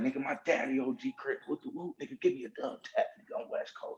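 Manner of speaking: mock crying, breathy and half-whispered, tearful. Retelling how someone begged for a gang handshake: imitating someone crying.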